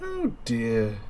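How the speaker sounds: creepy, high, soft doting game-character voice.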